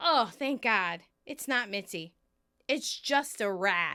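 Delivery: ordinary talk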